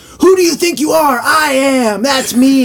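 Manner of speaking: put-on wild berserk outburst, very high, shrill, loud. Retelling a bowler winning on ESPN: imitating Pete Weber going berserk. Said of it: "he goes absolutely fucking berserk".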